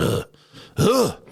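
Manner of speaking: very high, short caveman grunting noises. Describing how he communicates when annoyed, imitate caveman grunts. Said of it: "it's like cavemen and grunts".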